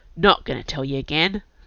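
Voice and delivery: ordinary delivery, nothing marked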